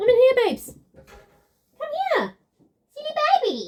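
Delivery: cooing sing-song dog talk. Calling to the dog from in here, in a dog voice. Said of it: "That's my dog voice".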